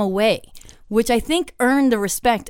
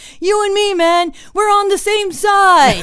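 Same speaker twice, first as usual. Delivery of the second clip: mock yelling, higher pitch and louder; 10 semitones higher, 6 dB louder than usual. Telling of a show where Alan taunted the crowd, imitating Alan yelling. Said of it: "yelling like".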